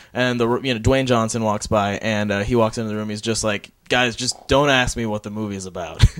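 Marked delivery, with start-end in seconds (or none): 3.9-6.1 put-on playful tone. Waiting outside a press junket room, retelling Dwayne Johnson playfully. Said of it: "he said it playfully".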